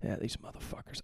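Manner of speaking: soft, whispered swearing.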